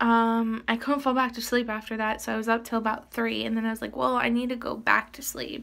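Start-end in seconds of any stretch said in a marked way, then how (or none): none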